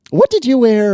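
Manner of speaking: loud, very high cracking squeak of the voice. Talking with another speaker about what they wear, voice cracking. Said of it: "did you hear my voice crack there?".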